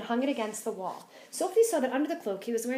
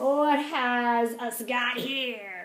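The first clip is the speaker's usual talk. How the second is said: thunderous, booming giant voice, very slow and drawn out. Reading the story aloud as the giant shouts in his cave: booming giant voice. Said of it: "His booming voice".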